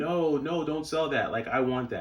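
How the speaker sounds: mild, protesting put-on scream. Retelling how a store employee reacted to the sale: imitating someone screaming. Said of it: "they were literally screaming".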